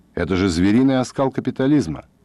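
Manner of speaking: plain reading voice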